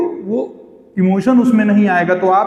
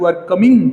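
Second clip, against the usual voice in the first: voice drops at the end, falling on "coming". Contrasting statement and question intonation: falling intonation on coming. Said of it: "बल्कि down दिखाई दे रहा है".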